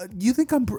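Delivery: very high, bashful, flustered stammer breaking off. Voicing Uraraka answering Deku's praise: blushing Uraraka voice. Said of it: "blush and be like".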